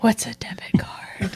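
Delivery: whispered, breath only. In an improvised scene, a character asks a question, whispering. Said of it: "I'm just whispering debit card".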